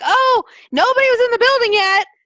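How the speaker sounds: high, loud, mocking voice.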